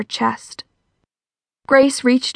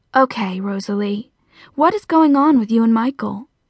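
plain reading voice

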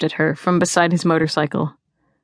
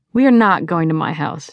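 ordinary delivery

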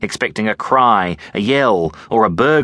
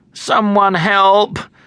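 very high-pitched groaning, pleading tone; 11 semitones higher than usual. A girl whose baby sister is inside calls out, groaned. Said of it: "she groaned".

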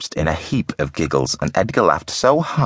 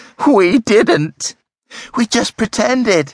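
very high, shrill, drawn-out screech; 4 dB louder than usual. Reading a girl answering while secretly spooning soap onto cereal, screeched. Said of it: "screeched Elsie".

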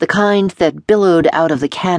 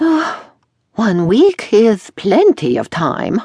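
high, sing-song, strained forced cheer; 5 semitones higher than usual. Pressed to finish the work in one week, he answers forcing a smile. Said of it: "forcing a smile".

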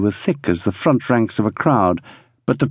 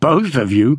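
amused, laughing delivery. A man answers a woman's marriage suggestion, laughing. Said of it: "laughed Brig".

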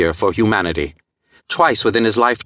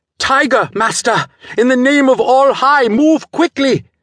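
very high-pitched, shrill, harsh shouted cry; 4 dB louder than usual. Reading an adventure, the servant cries a warning to his master, shrill harsh shout. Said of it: "Shrill and harsh, Ram Singh's voice rang out".

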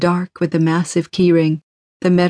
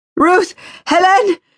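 very high desperate screaming; 13 semitones higher, 4 dB louder than usual. A woman at a railing screams to warn the children; desperate scream. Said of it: "she screamed desperately".

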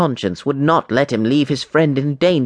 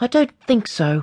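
very high pitch, doubtful, unconvinced tone; 9 semitones higher than usual. Unsatisfied with his friend's answer, he replies quietly. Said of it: "he said quietly".

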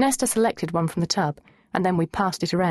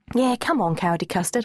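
ordinary delivery

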